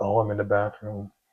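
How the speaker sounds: soft, hushed, voiced half-whisper stage whisper. Retelling a phone call, quoting his wife's answer: imitating someone half-whispering. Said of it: "so why are you whispering?".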